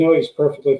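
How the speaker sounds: ordinary talk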